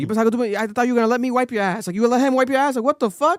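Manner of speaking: loud, high, worked-up, heated outburst. Retelling a show uncle's jealous outburst: imitating someone getting heated. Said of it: "he was heated".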